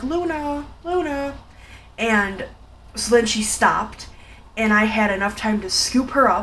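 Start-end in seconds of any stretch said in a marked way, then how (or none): 0.0-1.3 very soft, gentle, high-pitched voice. Retelling how the speaker called to her so she would stop, softly calling a name. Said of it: "very softly saying her name".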